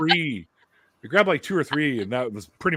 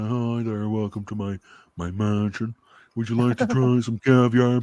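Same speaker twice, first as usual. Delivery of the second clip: snooty, snotty, stuck-up haughty voice. Retelling a first caviar offer at a mansion: imitating a snotty rich person. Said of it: "one of them snotty kinda".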